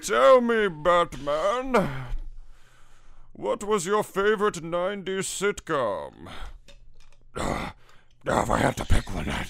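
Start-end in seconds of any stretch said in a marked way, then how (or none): 0.0-6.1 put-on very high drunken masked villain voice. During a poker bit, addressing Batman in a shitty alcoholic Bane impression. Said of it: "this fucking shitty alcoholic Bane impression".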